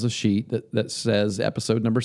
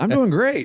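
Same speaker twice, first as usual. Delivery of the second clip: eager, upbeat, enthusiastic, very high pitch; 13 semitones higher, 3 dB louder than usual. Redoing a line to sound more enthusiastic, smiling and enthusiastic. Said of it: "I should sound more enthusiastic than that. Let me smile when I say it".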